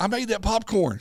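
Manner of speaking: loud, very high-pitched shouting. Retelling what a young man at the theater said: imitating someone yelling. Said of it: "he's yelling".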